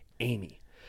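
plain reading voice

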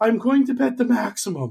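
very high-pitched put-on voice. Retelling a Vegas poker player announcing his bet at the table, dog-whistle voice. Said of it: "in his dog whistle voice".

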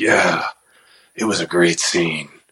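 low, hard-boiled tough-guy movie cop voice. Retelling what an actor said after a scene: Clint Eastwood voice. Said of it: "he turned on that little Eastwood voice".

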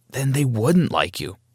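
plain reading voice

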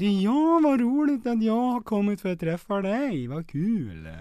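Dalarna dialect, laid on. Speaker running through Swedish dialects one by one, now Dalmål: Dalarna dialect. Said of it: "Dalmål".

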